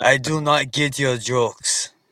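put-on very slow, drawn-out, deadpan Russian accent. Acting out a Russian man's reply to jokes: imitating a Russian man. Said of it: "you start joking around with the Russian dude".

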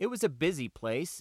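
plain

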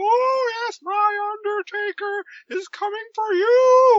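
very high-pitched, loud, belted-out put-on voice. Recapping a TV scene where a character keeps being Paul Bearer, Paul Bearer voice. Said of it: "continues being Paul Bearer".

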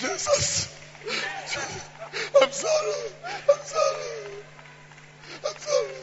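put-on, fake, weepy crocodile-tear crying. Mocking worshippers who cry fake tears at the altar: mock crying. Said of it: "cry some crocodile tears".

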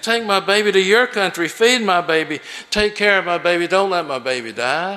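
imploring, pleading, begging voice. Retelling what a woman said to him about her baby, imitating her begging. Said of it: "she begged".

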